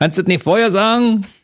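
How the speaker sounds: grumpy, high-pitched Berlin voice. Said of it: "im Berliner Backshop kann dir auch an was anderes passieren".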